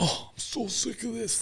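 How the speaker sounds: very high, exasperated, fed-up grumble. Retelling how dad reacts when stuff breaks: imitating frustrated dad. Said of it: "he gets frustrated when stuff breaks".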